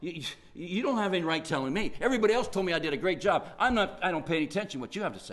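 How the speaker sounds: fast, defensive, dismissive brush-off tone.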